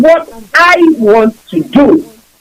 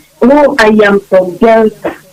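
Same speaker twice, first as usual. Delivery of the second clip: hesitant, timid, unsure, without conviction; 3 semitones lower than usual. Retelling how friends answer where they are from: imitating someone saying it very quietly. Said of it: "they say it very quietly".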